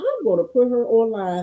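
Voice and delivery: plain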